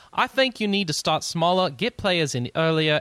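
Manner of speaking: loud, put-on, fake British accent. Reading aloud a quote from an interview, in a fake British accent. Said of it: "I'm still going to do it in a fake British accent".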